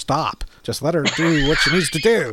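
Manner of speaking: plain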